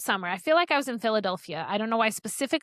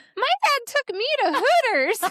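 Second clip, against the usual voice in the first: put-on very high, cute, little raspy kid voice; 13 semitones higher, 4 dB louder than usual. A father retelling what his daughter said at a Girl Scout meeting, in Erin's cute little raspy voice. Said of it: "in her little cute little raspy voice".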